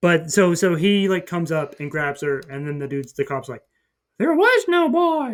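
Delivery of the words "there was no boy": loud, slow, high squeaky cartoon voice. Retelling a dream, quoting what the cop said, in a Mickey Mouse voice. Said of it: "I don't know why that was a Mickey Mouse voice".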